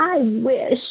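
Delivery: plaintive, whining woman's voice. Recalling a stranger overheard on the sidewalk; imitating a whiny woman's voice. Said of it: "woman's whiny voice go".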